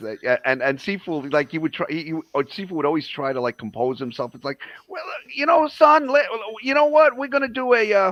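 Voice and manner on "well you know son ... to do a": very high, loud, hollering cartoon-cowboy bluster. Imitating Sifu trying to compose himself: imitating Sifu. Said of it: "I sound like Yosemite Sam".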